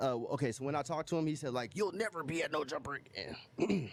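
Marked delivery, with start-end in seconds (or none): 1.7-3.9 slow, strained put-on voice. Retelling what he said on a call, imitating his strained voice.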